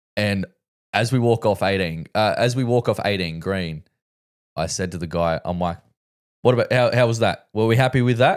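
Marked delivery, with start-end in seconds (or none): 6.4-8.4 sly, needling, cheeky know-it-all tone. Retelling teasing the guy after walking off eighteen: imitating own smart-ass tone. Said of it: "trying to be a bit of a smart ass".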